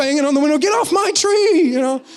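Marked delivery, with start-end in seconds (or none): 0.6-1.7 high, drawn-out yell, acted out. Retelling banging on the window at a squirrel in his tree: retelling yelling at a squirrel. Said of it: "I'm like yelling at him".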